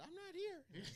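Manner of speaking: very high, very soft, hushed tiny voice. Doing a mock intro for the co-host who missed it: Tez impression. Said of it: "my Tez impression is".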